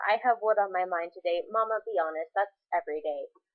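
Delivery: ordinary delivery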